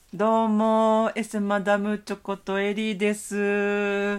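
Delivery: put-on cutesy voice, high and very slow. Introducing oneself at the start of the show: put-on cute voice. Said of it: "なんでそうちょっと最初になんか可愛い声出すの？".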